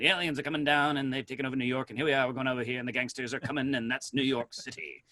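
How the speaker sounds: put-on rattled-off, rapid nineteen-thirties old-time newscaster patter. Describing an old radio newscaster, the speaker imitates him: fast Walter Winchell newscaster voice. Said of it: "talking in a real fast voice".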